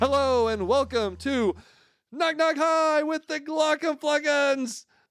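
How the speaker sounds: overly aggressive delivery. Opening the show Knock Knock Hi alongside a co-host: overly aggressive intro. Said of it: "That was very too aggressive".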